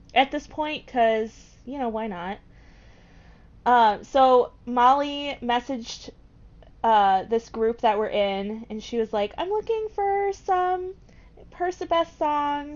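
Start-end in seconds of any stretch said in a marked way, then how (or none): 9.4-12.8 very high, inaccurate put-on voice. Retelling a message from Molly in a group chat: bad impression of Molly. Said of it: "a better impression of me".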